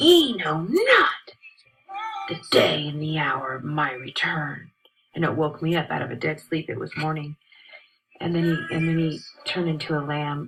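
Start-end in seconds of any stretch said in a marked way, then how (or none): 0.0-4.7 put-on loud, slow, swooping, deliberate, very angry tone. Recounting a dream that scared you, repeat the lion's words, retelling a very angry voice. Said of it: "He said in a very angry voice".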